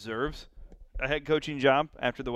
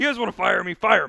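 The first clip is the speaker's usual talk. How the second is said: loud, high-pitched angry coach-style rant. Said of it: "was all angry".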